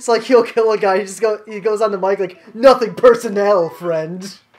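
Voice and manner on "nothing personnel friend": put-on pro gamer swagger. Retelling how a friend talks on the mic after a kill: imitating a friend acting like an MLG star. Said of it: "we always act like we're fucking, like, M L G stars".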